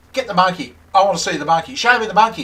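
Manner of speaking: mock screaming. Retelling a phone call, demanding to be shown the monkey: retelling own screaming. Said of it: "I started screaming at A B".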